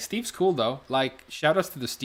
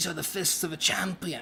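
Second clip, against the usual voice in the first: bad fake British accent, pitched up; 6 semitones higher, 4 dB quieter than usual. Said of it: "He doesn't even sound British".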